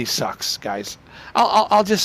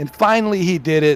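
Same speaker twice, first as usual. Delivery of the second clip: normal talking voice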